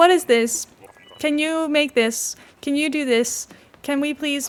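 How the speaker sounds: mocking lazy tone. Imitating people who ask Grok everything: mocking people asking AI. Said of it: "it angers me how easy it is to just be like".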